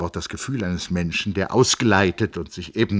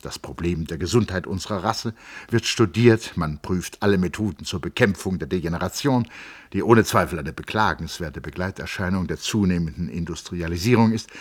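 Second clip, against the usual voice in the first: ordinary delivery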